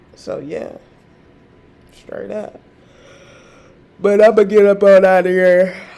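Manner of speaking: loud words through yawn. Speaker signing off to listeners, yawning while talking. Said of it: "I think I'm yawning".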